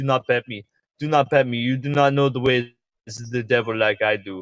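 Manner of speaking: put-on meme creature voice. Retelling a VR chat scene, imitating Ugandan Knuckles players. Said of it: "they'd be like".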